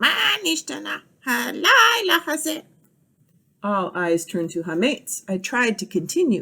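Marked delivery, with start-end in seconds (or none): 0.0-2.6 squeaky, high parrot voice. Narrating a story where the parrot Hametz repeats the narrator, squeaky parrot voice. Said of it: "repeated in his squeaky parrot voice".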